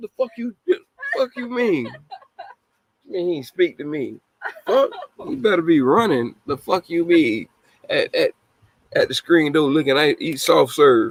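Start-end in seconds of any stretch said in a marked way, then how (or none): 0.0-7.5 acted, mock shouting, higher pitch. Acting out an angry father yelling at a boy: acted yelling. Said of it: "I'm yelling at you".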